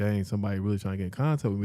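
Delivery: ordinary delivery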